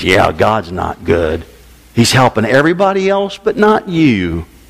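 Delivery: deep put-on devil voice. Acting out Satan agreeing with a complaining believer: imitating Satan. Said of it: "And Satan says".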